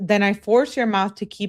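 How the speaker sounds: normal talking voice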